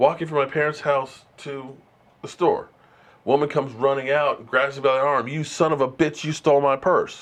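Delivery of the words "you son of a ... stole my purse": angry, accusing screamed outburst in a woman's voice. Retelling a woman grabbing him as a child: imitating a woman screaming. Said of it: "she's screaming and yelling at me".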